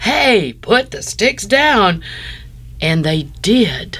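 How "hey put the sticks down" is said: very strong, slow, pitched-up commanding leadership voice. Retelling what Patrick, who was in charge, said to the group, in his strong leadership voice. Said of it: "in this very strong leadership voice".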